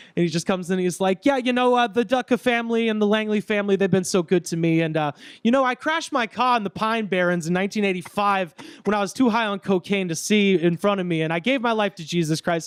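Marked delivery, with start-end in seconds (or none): 1.3-12.7 put-on Staten Island, New Jersey accent. Retelling what a man said at a funeral: put-on Staten Island accent. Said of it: "that like Staten Island, New Jersey bullshit voice".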